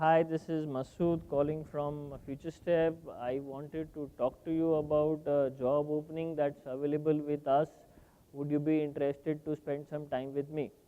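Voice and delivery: low, flat, dull, unpersuasive, low-energy tone. Showing how a recruiter's phone call opening sounds: low-energy flat tone. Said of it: "So if you go with that tone, which lacks energy and persuasion".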